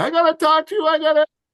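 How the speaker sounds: very high, loud, insistent, urgent yelling. Retelling a woman running up during his benediction, imitating someone yelling. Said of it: "She starts yelling".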